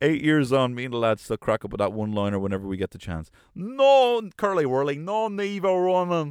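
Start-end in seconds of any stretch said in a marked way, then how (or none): 3.5-6.3 put-on Irish Donegal accent. Quoting the one-liner you and the lads still repeat, in a big Donegal accent. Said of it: "gave us in a big Donegal".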